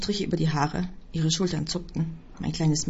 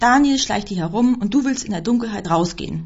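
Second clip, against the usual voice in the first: loud, angry, sharp snapping delivery; 3 semitones higher, 7 dB louder than usual. The narrator blocks a woman's way and snaps at her. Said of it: "herrschte ich sie an".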